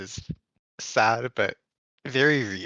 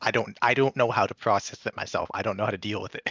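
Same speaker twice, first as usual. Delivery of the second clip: normal talking voice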